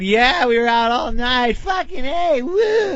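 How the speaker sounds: put-on high, slow, whooping partying party girl voice.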